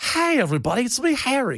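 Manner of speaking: high announcer style. Doing an impression of the great announcer Harry Carey: Harry Carey impression. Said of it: "Harry Carey, the great announcer".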